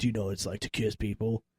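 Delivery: fake raspy smoker's voice. Retelling what an older girl said at daycare: imitating a girl with a smoker's voice. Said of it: "She talked like that? Was she smoking a cigarette?".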